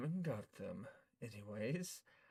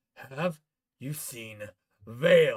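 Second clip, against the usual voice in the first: booming shout, very loud; 14 dB louder than usual. Game master voicing someone at your door, yelling again, yelling. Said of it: "He yells again".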